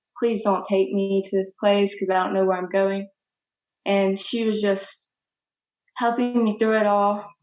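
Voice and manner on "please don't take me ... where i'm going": mock tearful, crying pleading voice. Retelling pleading with the lady from the police station: retelling a tearful plea. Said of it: "I kept crying to her".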